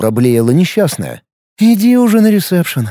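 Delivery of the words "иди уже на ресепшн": sighed-out words, said on a sigh. The narrator answers the frightened woman, sighing. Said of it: "вздохнула я".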